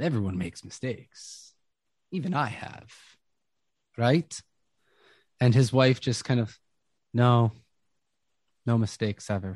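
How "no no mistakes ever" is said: monotone, flat, zombie-like delivery, louder. Voicing the wife answering the players: monotone zombie-like voice. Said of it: "She's very monotone, very just zombie-like responding".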